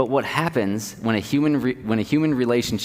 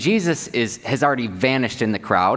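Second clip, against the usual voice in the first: ordinary talk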